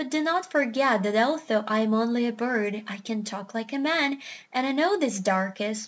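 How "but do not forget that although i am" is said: usual speaking voice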